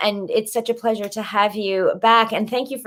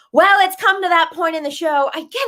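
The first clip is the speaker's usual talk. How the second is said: loud, excited shouting yell; 7 semitones higher than usual. Hosting a show and announcing the next segment, yelling excitedly. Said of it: "I don't know why I'm yelling".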